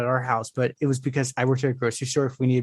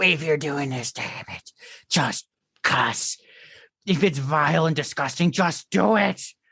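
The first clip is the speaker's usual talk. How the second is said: put-on cranky, grumpy old man voice; 2 semitones higher than usual. Retelling how a reader sounded while reading it aloud, imitating a grumpy old man voice. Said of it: "His grumpy old man voice".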